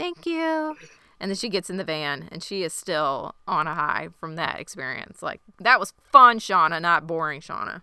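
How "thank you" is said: tiny, very high-pitched little voice. Retelling a show scene after a tense standoff: little Shauna voice. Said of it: "little Shauna voice".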